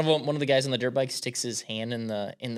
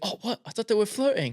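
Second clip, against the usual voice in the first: put-on English accent pushed very high in pitch; 9 semitones higher than usual. Retelling a line from a comedy clip, imitating an english accent. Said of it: "In his, uh, English accent".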